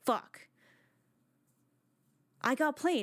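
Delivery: angry, fed-up cursing outburst, acted out. Acting out a character who realizes he was tricked: angry character. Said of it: "he gets pissed".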